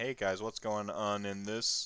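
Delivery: mock deadpan delivery. Act out someone who walks in and greets the guys, acting out a deadpan. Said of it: "And just like deadpans".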